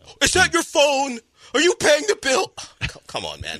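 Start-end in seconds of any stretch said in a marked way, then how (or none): 0.2-2.5 very high-pitched yell, acted out. Retelling an earlier outburst: retelling own yelling at Gilbert. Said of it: "me yelling at Gilbert".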